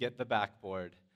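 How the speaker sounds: ordinary delivery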